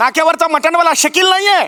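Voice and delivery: cross, scolding voice.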